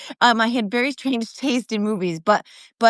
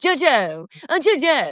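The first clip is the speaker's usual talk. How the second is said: stock put-on British accent; 3 semitones higher than usual. Showing how Piers Morgan says a name, in a Piers Morgan voice. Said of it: "so my Piers Morgan".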